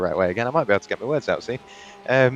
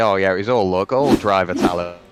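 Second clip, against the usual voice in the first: louder mock pleading. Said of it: "he will plead and say".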